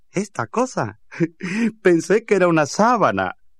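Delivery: mocking. Palitroque takes down his sick grandmother's huge handkerchief: mocking. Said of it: "Se burló Palitroque".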